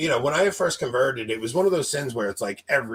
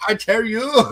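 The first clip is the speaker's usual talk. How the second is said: put-on Chinese accent, higher and louder; 9 semitones higher, 6 dB louder than usual. Retelling what the priest said in confession: imitating a priest's Chinese accent. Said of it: "Do it in the accent".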